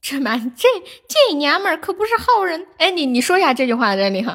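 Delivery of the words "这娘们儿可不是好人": Tianjin dialect, first syllable pitched high. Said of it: "天津话的精髓就是第一个字得调高".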